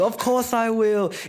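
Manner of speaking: very high, stretched, drawn-out anime-style scream. Retelling the live action scene: imitating Luffy screaming. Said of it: "Luffy's screaming".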